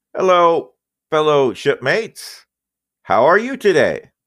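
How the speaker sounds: ship's computer voice. Voicing the ship's computer greeting the players as they walk in, Shipcom computer voice. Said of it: "you hear a beep beep boop".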